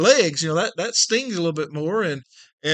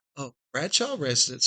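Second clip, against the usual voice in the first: imitated soft, sweet phone voice; 3 semitones lower, 6 dB quieter than usual. Acting out a southern mom answering the phone, imitating mom's soft, sweet phone voice. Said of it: "just as soft and sweet as it could be".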